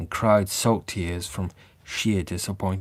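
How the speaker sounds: ordinary delivery, nothing marked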